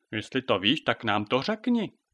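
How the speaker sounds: plain reading voice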